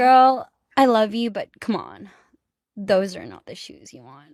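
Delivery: full put-on sing-song Valley Girl accent. Speaker mimics a fan comment about shoes in a Valley Girl accent. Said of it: "like that".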